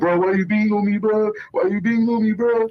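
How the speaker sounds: very high-pitched, tearful, crying, pleading voice. Retelling a beating in a car, imitating someone crying. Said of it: "Portland crying".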